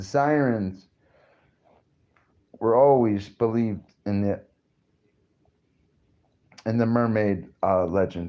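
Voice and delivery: talking with hiccups between words. Explaining where the mermaid myth comes from, hiccuping while talking. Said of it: "I'm, like, hiccuping".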